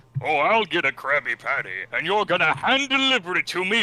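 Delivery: high, loud cartoon yell, pitch swinging all over. Doing another impression for the others: Plankton voice. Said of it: "another impression I can do is, uh, Plankton from SpongeBob".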